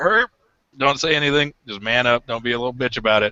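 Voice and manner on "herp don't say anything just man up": usual speaking voice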